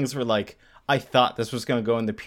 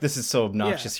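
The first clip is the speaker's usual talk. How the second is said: plain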